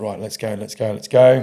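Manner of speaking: usual speaking voice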